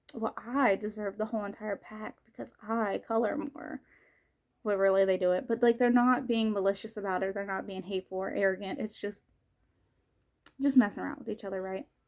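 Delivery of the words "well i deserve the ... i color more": plain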